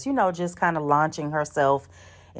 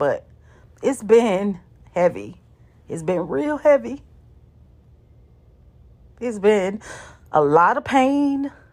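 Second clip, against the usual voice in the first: moved, heartfelt, emotional, voice pitched up; 6 semitones higher than usual. Reflecting on watching so many people suffer in their practice, getting emotional. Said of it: "I'm getting emotional thinking about it".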